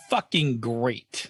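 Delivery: sarcastic tone. Answering how you're feeling, despite a rotten mood: sarcastic. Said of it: "I mean that as sarcastically as possible".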